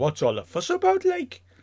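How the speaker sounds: very high, bad Newcastle Geordie accent. Imitating people from Newcastle out in the cold, bad Geordie accent. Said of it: "That was a bad accent".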